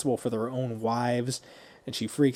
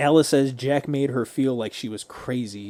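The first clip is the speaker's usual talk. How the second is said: ordinary talk, nothing marked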